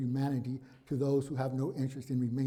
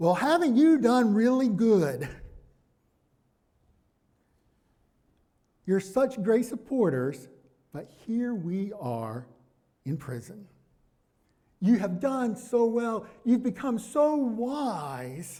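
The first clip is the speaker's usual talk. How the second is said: put-on sarcastic tone, higher and louder; 8 semitones higher, 6 dB louder than usual. Voicing Paul's words to the Corinthians: imitating Paul being sarcastic. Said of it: "He's being really sarcastic".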